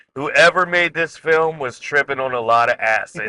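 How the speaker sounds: plain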